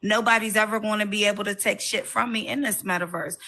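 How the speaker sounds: plain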